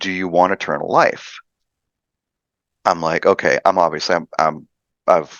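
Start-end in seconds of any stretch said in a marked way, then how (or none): 0.0-1.4 put-on booming woman's voice. Retelling what a voice in their head said, imitating a booming female voice. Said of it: "female booming voice in my head".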